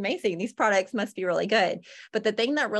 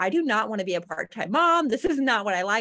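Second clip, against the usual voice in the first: tearful, crying, pleading. Retelling a phone call to mom about work and a baby: retelling own past crying.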